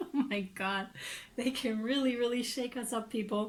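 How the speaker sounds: speaking with laughter breaking into the words. Reading tarot cards aloud, laughing while talking. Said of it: "I'm just laughing because".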